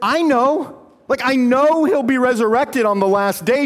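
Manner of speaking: play-acted exasperated, uncomprehending tone. Retelling Martha's reply to Jesus: imitating Martha's exasperation. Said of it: "you can hear the exasperation".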